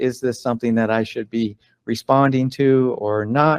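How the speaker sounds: normal talking voice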